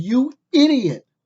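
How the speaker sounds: high, loud, furious yell.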